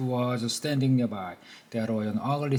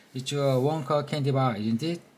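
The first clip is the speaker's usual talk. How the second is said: usual speaking voice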